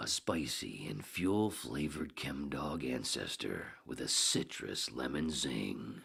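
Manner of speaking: movie trailer announcer voice. Redoing a strain description on a second take, Hal Douglas trailer voice. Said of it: "Should be the trailer voice".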